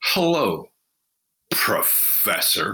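dripping, heavy sarcasm with swooping pitch. Retelling how a man greeted the speaker in a conference room, mock-sarcastic greeting. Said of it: "I can't even describe the amount of sarcasm".

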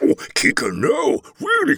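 very high, swooping, animated big-man voice. Recalling a voice job, a speaker does a Brian Blessed voice. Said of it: "Brian Blessed".

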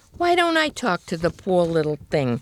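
plain reading voice

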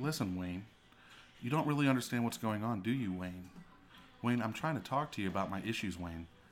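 soft, calm, needling tone with repetition. Retelling how she talks to Wayne about her issues, mimicking her calm tone. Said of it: "she'll talk to me in a calm tone".

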